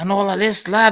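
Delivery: bad, terrible put-on Liverpool Scouse accent. Speaker imitates how rowdy men speak: terrible put-on accent. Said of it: "well that was a terrible accent".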